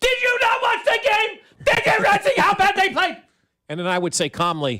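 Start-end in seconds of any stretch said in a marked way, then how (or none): 0.0-3.2 put-on very high, shouted, screaming rant. Imagining a debate where the opponent screams back: imitating Stephen A. Smith screaming. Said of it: "he would start screaming at me".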